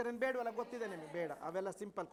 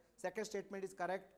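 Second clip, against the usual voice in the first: plain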